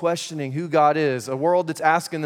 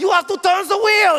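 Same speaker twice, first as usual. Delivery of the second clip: play-acted urgent, frantic shout, pitched very high; 6 dB louder than usual. Retelling what she yelled after being made to get out of the car: retelling her yelling. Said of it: "She's like yelling".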